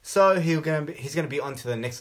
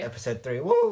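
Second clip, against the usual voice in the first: voice cracking and breaking mid-cheer on woo. Opening a podcast episode, the host repeats the episode number, voice cracking. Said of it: "My voice just broke".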